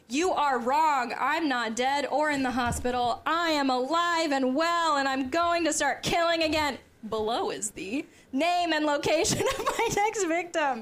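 high, slow, mildly yelled, play-acted. Reading aloud a killer's all-caps letter: pretend yelling. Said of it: "I'm gonna pretend I'm yelling for the all caps".

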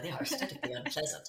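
soft, disapproving, judgmental voice. Speaker repeats a dismissive claim about a design, mock-judgy voice. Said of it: "I'm kind of doing that that uh, judgy voice".

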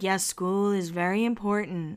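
mock calm, soft, even, measured tone. Recapping a show, the speaker quotes Lisa answering Whitney, imitating Lisa's calm voice. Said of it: "in her calm voice".

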